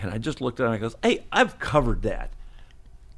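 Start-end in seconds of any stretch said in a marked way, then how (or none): 1.0-2.3 sharp, curt, dismissive tone. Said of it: "Kind of that, like that".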